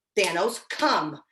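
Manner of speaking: very firm, slow delivery.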